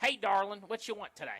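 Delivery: loud, sun-beaten Florida diner waitress voice. Retelling being greeted at a Florida diner: imitating a sun-beaten diner waitress. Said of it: "somebody who's got, like, very sun-beaten face comes up and's like".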